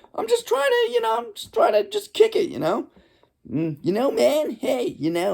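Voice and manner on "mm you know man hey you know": cartoonish put-on voice, higher pitch. Imitating a neighbor's way of talking: cartoon-like neighbor impression. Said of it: "that's my neighbor".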